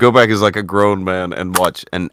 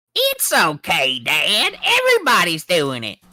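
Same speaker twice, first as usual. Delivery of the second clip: bad put-on cartoon kid voice, higher; 10 semitones higher than usual. Doing bad King of the Hill impressions, answering Dad: bad Bobby Hill impression. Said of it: "bad King of the Hill impressions".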